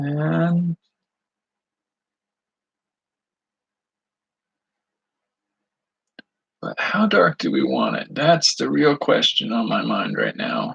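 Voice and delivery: crackly, cracking voice. Painting and deciding how dark to go, in a crackly voice. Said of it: "I get this crackly voice".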